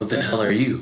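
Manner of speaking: gruff, rough-edged voice. Reading game text aloud, a stranger's line: gruff voice. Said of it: "a gruff voice says".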